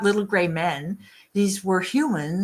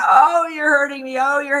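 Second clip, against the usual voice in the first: mock high, loud pained screaming and crying out; 7 semitones higher, 6 dB louder than usual. Retelling an abduction exam as the woman screams: imitating a woman screaming in pain. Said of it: "She's screaming".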